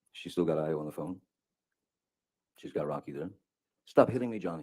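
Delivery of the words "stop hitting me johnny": put-on freaked-out, high, upset scream, higher and louder. Retelling what she screamed at him: imitating Heard's freaked-out, high-pitched scream. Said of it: "she's screaming in".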